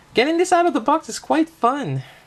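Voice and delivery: high, swooping, heavily sarcastic tone.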